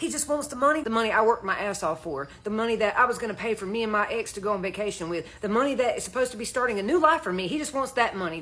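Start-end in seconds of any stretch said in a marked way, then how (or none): none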